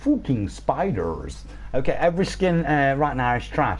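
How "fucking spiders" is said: spoken in a put-on Polish accent. Answering accent requests from comments, the speaker does a Polish accent. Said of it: "Polish accent".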